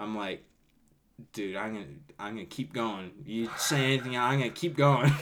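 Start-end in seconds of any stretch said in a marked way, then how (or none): 1.3-5.1 loud, heated, fed-up, play-acted angry voice. Retelling own words after punching a kid: imitating own angry threat. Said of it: "Because I was so pissed off".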